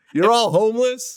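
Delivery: play-acted shrill, very high yell. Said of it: "yelling at the paparazzi".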